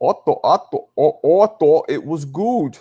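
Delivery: put-on German accent. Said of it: "now I just sounded German".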